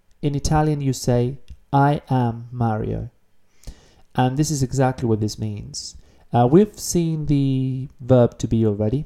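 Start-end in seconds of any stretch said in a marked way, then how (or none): none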